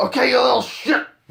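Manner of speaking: very loud, very high, shrill rough screaming. Asking about boot camp, imagining the bus driver: imitating a screaming bus driver. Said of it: "screaming at you, like the bus driver over the mic".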